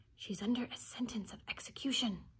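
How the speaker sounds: soft, hushed whisper under the breath. The rabbit puts his mouth close to Alice's ear and answers, whispered. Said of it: "and whispered".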